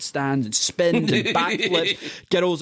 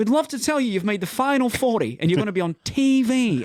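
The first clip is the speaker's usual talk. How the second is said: put-on English accent, higher; 7 semitones higher than usual. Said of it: "Your English accent is fucking spot on".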